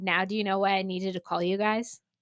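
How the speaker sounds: ordinary delivery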